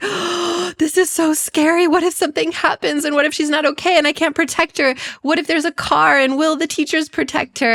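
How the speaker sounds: tearful fretting, pitched very high. A mother retells her daughter leaving for a forest trip, retelling own tearful worry. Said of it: "And I was just crying".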